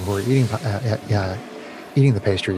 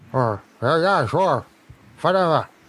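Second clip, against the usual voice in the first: mouth full, chewing, much higher voice; 6 semitones higher than usual. A character answers a request for help: talking with mouth full. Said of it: "He's got like a mouthful of pastries".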